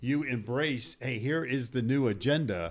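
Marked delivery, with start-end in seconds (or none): none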